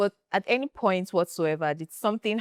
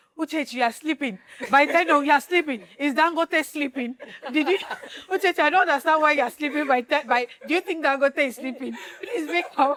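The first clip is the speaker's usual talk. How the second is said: nagging, hectoring, scolding voice, pitched up; 9 semitones higher than usual. Retelling what Linda says to the speaker, imitating Linda. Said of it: "You know how Linda will say".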